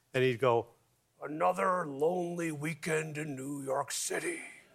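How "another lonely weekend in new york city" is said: soft, slow talking out the side of the mouth. Recalling a guy in a record store's jazz section, the speaker imitates his side-of-mouth talk. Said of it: "spoke out of the side of his mouth".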